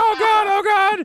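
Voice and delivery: very high, very slow, drawn-out freaked-out cry. Retelling a cartoon scene where a magician panics: imitating someone freaking out. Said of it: "He's freaking out".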